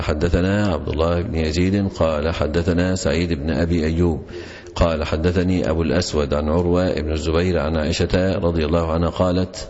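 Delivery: ordinary talk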